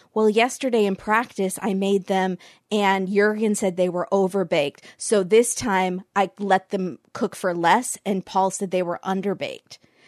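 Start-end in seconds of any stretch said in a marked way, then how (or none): none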